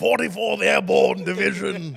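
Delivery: loud, high military voice. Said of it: "this military".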